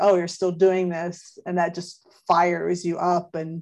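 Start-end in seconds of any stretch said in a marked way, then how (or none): 0.0-1.4 put-on glib, offhand delivery. Describing what fires one up, imitating a glib remark. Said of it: "glibly says something like".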